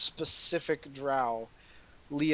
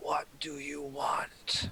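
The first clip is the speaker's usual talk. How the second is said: rough-edged, husky, harsh voice; 5 dB quieter than usual. Narrating a ritual scene, voicing the drow as she speaks: husky, harsh voice. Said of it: "she spoke in a in a husky, harsh voice".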